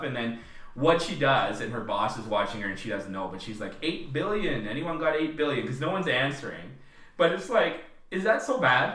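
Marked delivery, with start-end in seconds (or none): none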